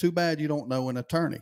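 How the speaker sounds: ordinary talk, nothing marked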